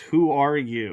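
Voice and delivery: light hint of a mock disembodied booming voice. Retelling a voice heard in a void: imitating a loud booming voice. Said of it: "this loud, booming voice asks".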